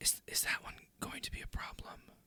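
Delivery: very quiet, hushed whisper, close in. Voicing a character speaking into a player's ear: whispering. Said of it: "whispers in your ear".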